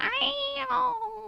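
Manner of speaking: piercing, shrill, very high, drawn-out call. Imitating how she says the name: imitating a shrill "kyle". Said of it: "It's so shrill".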